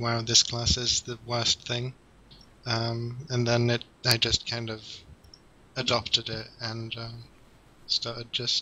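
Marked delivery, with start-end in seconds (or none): none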